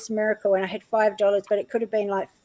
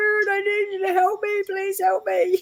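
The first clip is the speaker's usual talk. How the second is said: put-on crying, tearful pleading, very high-pitched; 11 semitones higher than usual. Retelling a past moment of bursting into tears, praying for help: retelling a tearful plea. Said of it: "I was bursting into tears".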